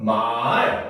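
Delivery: 말 sliding from low pitch up high. Teaching the two-dot tone that starts low and rises; say 말 rising from low. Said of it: "처음에는 낮았다가 높아지는 소리".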